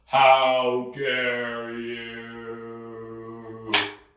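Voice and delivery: very slow, low, soft slow-motion delivery, you stretched. Staging a fake slap, the speaker repeats the line in very slow motion. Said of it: "even slower".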